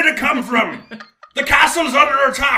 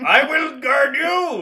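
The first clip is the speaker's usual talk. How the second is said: loud, projected, called-out voice; 4 semitones higher than usual. In character, calling everyone after an explosion to follow to safety: yelling very loudly. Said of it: "And Padler's yelling very loudly".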